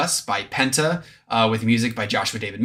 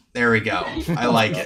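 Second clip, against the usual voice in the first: usual speaking voice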